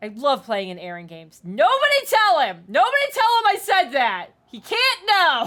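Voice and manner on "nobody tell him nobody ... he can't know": yelling loudly. Begging the others not to tell the dm what was said: yelling loudly. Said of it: "I'm yelling so loud".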